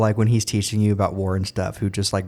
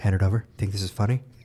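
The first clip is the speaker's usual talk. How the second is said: deadpan put-on teacher voice, quieter; 2 semitones lower, 5 dB quieter than usual. Imagining a teacher catching a student on the phone: straight-faced Mister Neeson. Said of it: "so straight-faced about everything".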